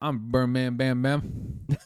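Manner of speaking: put-on thick Alabama accent. Retelling meeting a recruit from Alabama: imitating a thick Alabama accent. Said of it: "that's so accurate".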